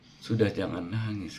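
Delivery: ordinary talk, nothing marked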